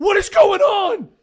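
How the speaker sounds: drawn-out panicked screaming, very loud and high. Voicing a character who panics as the walls crack: panicked screaming. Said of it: "He's just screaming".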